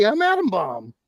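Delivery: put-on high-pitched hand-puppet character voice. Recalling a voice done for a hand puppet on a stream, Adam Bomb puppet voice. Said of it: "I did a voice for it".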